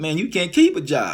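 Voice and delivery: mock judgmental, condescending tone. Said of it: "sarcastic, uh, you know, judgmental, downplaying me type way".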